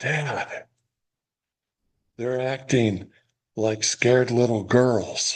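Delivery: stage half-whisper with voice. Father quoting what his seven-year-old son leaned over and said, retelling son's half-whisper. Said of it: "he whispers".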